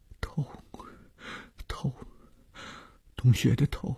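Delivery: weak, strengthless, feeble near-whisper. Just awake, he answers the doctor's question in a feeble, strengthless voice. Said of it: "有气无力地说".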